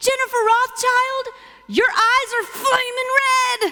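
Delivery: put-on, very high, panicked, alarmed cry. Retelling a husband's words at the garage door: imitating Phil in a panic. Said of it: "more panic than I've ever heard in my husband's voice".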